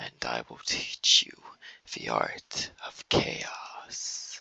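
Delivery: slow, hushed, mysterious, hissing, serpent-like whisper. Showing how Havoc speaks, in a soft, hissing Havoc voice. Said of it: "Havoc is very soft-spoken. His voice is very mysterious ... like he speaks like this. He speaks like a serpent".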